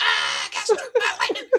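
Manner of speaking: mock, very high screaming cry. Retelling a dude screaming in the background during a lightning storm: imitating someone screaming. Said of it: "dude in the background screaming".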